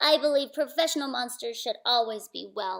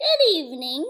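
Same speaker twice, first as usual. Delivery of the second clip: high, silky, raised voice; 5 semitones higher, 6 dB louder than usual. Narrator reading a second monster greeting the narrator: Ralph's high, silky voice. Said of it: "he said in a high, silky voice".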